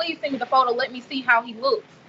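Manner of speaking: ordinary talk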